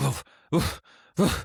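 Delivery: imitated grunting. Retelling how a guest answered the question: imitating grunting. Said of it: "It was like grunting".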